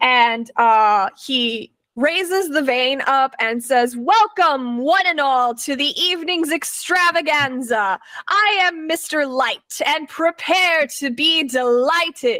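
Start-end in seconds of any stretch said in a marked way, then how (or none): 3.9-12.4 grand ringmaster-style showman announcer voice. Voicing Mister Light opening the evening's show: magically amplified loud voice. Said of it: "using prestidigitation to make it sound louder like a microphone".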